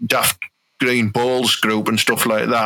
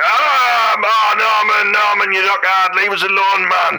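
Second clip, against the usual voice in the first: play-acted, very high, drawn-out, whimpering, crying, begging tone; 10 semitones higher, 4 dB louder than usual. Threatening a leg lock and acting out the victim begging: imitating someone crying. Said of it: "until you're crying and going".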